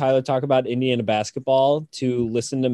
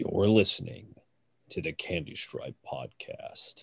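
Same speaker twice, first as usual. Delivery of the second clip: low, deep, breathy, hushed radio-host announcer voice; 8 semitones lower, 10 dB quieter than usual. Trying out the podcast intro line in a deep voice. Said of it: "Not that deep".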